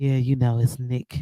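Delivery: very low, deep, smooth, sexy voice. Teasing a co-host about how he came in: imitating Nick's smooth sexy voice. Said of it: "came in today real smooth with his sexy voice on".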